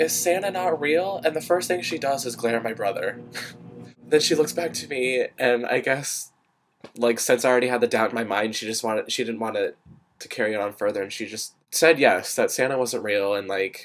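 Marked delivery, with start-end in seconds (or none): 0.0-1.2 mock high, stretched-out, drawn-out yell. Recalling running home and kicking open the door: retelling a yell at mom. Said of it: "I like yell at my mom".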